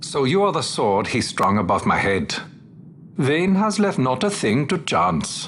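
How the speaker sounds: put-on Middle Eastern accent. Facing a sword sent by Vayne in a game scene: Middle Eastern accent. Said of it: "The Middle Eastern from the people of Bujeba".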